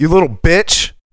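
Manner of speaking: loud yell, called out. Retelling chasing a kid to a house, retelling own yell at him. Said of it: "I yelled to him".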